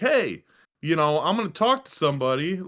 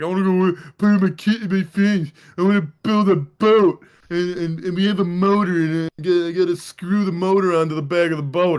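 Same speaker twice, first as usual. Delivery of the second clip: put-on loud, bratty-kid complaining voice; 3 semitones higher, 6 dB louder than usual. Retelling Henry refusing his obligations: imitating Henry being a brat. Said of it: "Henry's being a little brat".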